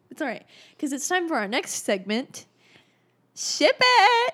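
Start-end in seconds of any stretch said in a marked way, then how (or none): 3.4-4.4 very loud, very high yell, voice breaking badly. Co-host introducing the episode's next segment, voice cracking. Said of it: "Your voice, like, cracked really bad".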